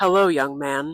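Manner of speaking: very deep, low voice. Retelling a voice that came out of the night while he stood alone: deep voice. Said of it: "I heard a deep voice appear".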